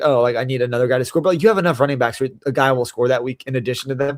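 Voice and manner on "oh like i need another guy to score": ordinary talk, nothing marked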